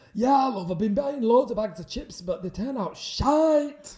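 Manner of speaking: very loud, high-pitched shouted chatter. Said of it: "I'm [name]".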